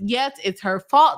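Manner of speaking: plain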